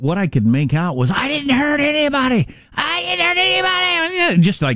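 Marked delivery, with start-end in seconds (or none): 1.1-4.4 acted, very high, drawn-out, violently angry scream. Retelling a guy screaming in the emergency room: imitating angry screaming. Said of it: "and he was screaming".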